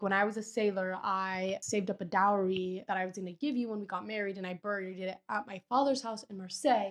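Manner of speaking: usual speaking voice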